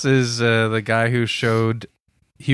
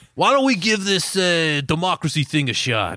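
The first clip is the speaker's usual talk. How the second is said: put-on heavy New York accent, higher; 6 semitones higher than usual. Voicing an ancient greek, in a thick new york accent. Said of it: "the ancient Greeks did talk with thick New York accents".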